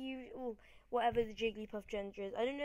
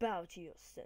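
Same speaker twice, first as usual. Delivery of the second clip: really cool put-on ninja character voice; 4 semitones lower, 3 dB quieter than usual. Voicing a ninja dude in the last battle: cool ninja character voice. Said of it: "we need a really cool voice".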